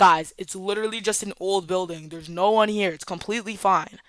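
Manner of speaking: ordinary talk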